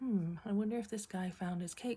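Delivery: ordinary talk, nothing marked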